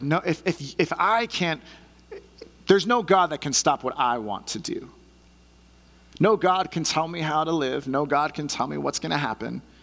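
put-on arrogant, haughty, proud, defiant regal voice. Acting out the boasting king's defiant words: imitating a proud king. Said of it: "the pride in his voice".

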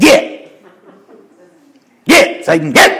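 high shooing call. Telling how Jesus told Satan to be gone, like shooing away a dog. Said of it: "It's like telling a dog to get".

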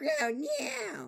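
very high, squeaky voice with a crack. Quoting a villain's line to another speaker, voice squeaking. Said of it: "We're laughing at my voice squeaking".

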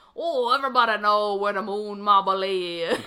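put-on heavy Louisiana accent, very loud. Retelling what the first man they stopped said, in a thick Louisiana accent. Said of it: "has the thickest Louisiana accent I've ever heard".

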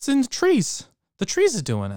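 very high put-on voice swooping around. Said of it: "pretty good impression".

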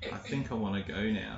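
spoken very softly. Retelling a woman's reply to the speaker's loud question, said very quietly. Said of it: "she said very quietly".

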